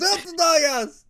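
furious shouting.

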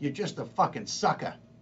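put-on heavy New York accent. Retelling what a woman said to him: heavy New York accent. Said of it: "she said it in her heavy New York".

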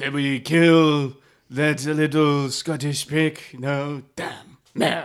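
loud, attempted put-on French accent. Speaking in character to the group: put-on french accent. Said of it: "That's my, like, oh, French".

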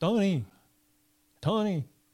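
terrible put-on Cuban accent. Retelling knocking on a door, the speaker calls the man inside in a very bad cuban accent. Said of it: "I do my very worst Cuban accent".

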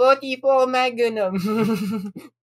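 put-on high, babyish Japanese voice. Retelling how he pulls a gun out of his toy chest: Japanese baby voice. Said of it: "Japanese baby voice go".

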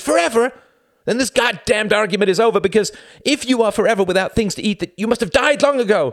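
piercing, very high screech. A woman argues with a man, shrieking. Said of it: "She shrieked".

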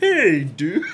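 put-on Canadian-accented voice. Acting out the greeting Jake always gives on calls: imitating Jake's Canadian-sounding voice. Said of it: "he always sounds like a Canadian".

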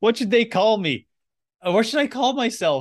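high, loud, excited robot voice.

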